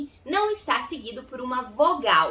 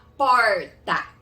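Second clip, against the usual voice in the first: Goiás accent, vibrating growled r in porta; 3 semitones lower, 6 dB louder than usual. Pronunciation lesson on how people in Goiás say porta, Goiás accent, growled R in porta. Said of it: "Aqui em Goiás a gente costuma falar porta".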